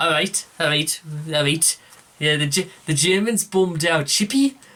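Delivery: clumsy, bad, put-on Scouse Liverpool accent. Attempting a joke line after swearing off it: bad Scouse accent. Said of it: "I'm never gonna try and do a Scouse impression again".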